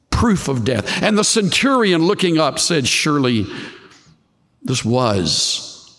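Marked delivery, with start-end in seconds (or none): 4.8-5.7 was strongly stressed, punched as the key word. Quoting the centurion at the cross with stress on WAS. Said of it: "Emphasis on was".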